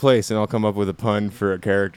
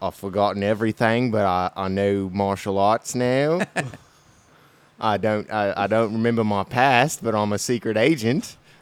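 put-on Australian accent, comedy action hero voice; 3 semitones lower, 4 dB quieter than usual. Doing a bit called Jason Melbourne, Jason Melbourne, Australian accent. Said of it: "to do my australian accent".

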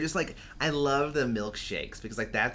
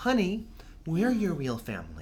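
put-on tender, sugary, sweet coaxing tone; 5 semitones higher than usual. Speaker imitates a woman who would never break eye contact; imitating a sweet tone. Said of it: "she would say in this sweet tone".

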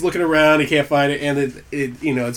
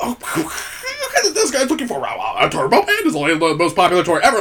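put-on insane-sounding voice, pitched higher; 4 semitones higher than usual. Retelling a movie scene: imitating Chris Parnell's manic character. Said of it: "he was going insane".

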